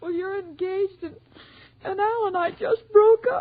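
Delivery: tearful crying voice. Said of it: "Why are you crying, dearie?".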